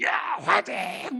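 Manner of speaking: slow, drawn-out shouted cheer.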